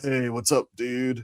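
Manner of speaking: put-on stoner voice. Recounting a character from Minions, speaker imitates him in a stoner voice. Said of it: "your typical stoner type of voice".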